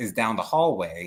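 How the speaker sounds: ordinary talk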